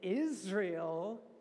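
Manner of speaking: emphasis on the word Israel. Quoting Jesus speaking to the people standing around, stress on Israel. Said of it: "emphasis on Israel".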